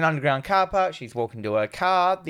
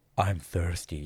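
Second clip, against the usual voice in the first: very low, hushed, husky voice; 10 semitones lower, 6 dB quieter than usual. Quoting a film character to a co-viewer, imitating a husky voice. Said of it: "She has a husk of a voice".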